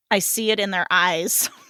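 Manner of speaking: usual speaking voice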